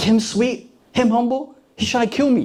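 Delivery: high-pitched, seething, furious disbelief. Retelling Saul hearing David praised: imitating Saul burning with anger. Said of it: "Saul starts to burn up with anger".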